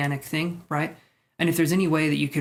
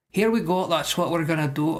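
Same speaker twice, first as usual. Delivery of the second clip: put-on Irish accent with a lilt. Doing a sudden joke impression while reading cards: irish impression. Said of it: "it was an Irish impression".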